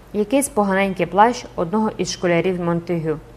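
ordinary delivery, nothing marked

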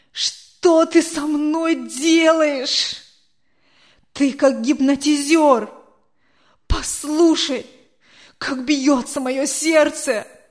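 loud, begging, imploring plea. Anatoly cries out to the old man, pleading. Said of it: "взмолился Анатолий".

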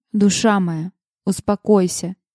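ordinary delivery

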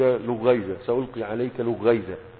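ordinary talk, nothing marked

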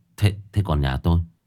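ordinary delivery

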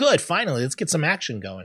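ordinary delivery

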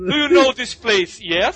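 imitated Russian accent. Quoting a line in English, in an imitated Russian accent. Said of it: "Sotaquezinho de russo".

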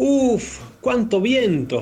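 annoyed. The grandfather crosses the lake in his boat in the wind: angry. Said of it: "Se enojó el abuelo".

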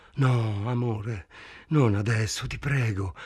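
whispering. Reading a novel aloud, voicing Helen's reply to Frank, whispered. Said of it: "Helen sussurrò".

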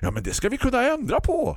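bright, very high, chirpy, swooping sing-song. Narrator reading Peter from the electric company answering the tearful narrator: chirpy Peter voice. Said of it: "kvittrade Peter från elbolaget".

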